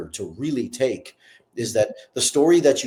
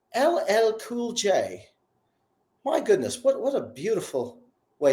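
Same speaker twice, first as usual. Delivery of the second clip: slow, imperfect put-on British accent; 9 semitones higher than usual. Quoting a small british interviewer speaking to ll cool j, not-great british accent. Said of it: "my British accent probably isn't the greatest".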